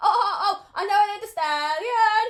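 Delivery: very loud, very high, drawn-out belted exclamation. Describing another possible intro, quoting a celebrity line: Keke Palmer impression. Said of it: "a bit like what Keke Palmer did".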